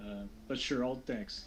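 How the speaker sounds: quiet, sarcastic voice. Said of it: "She says it sarcastically".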